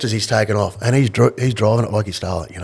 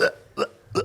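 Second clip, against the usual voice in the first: put-on dry retching and gagging, quieter. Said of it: "she starts dry reaching".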